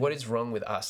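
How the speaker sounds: ordinary talk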